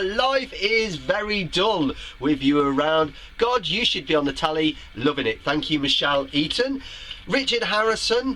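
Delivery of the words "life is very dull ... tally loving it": usual speaking voice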